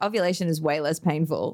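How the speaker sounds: ordinary talk, nothing marked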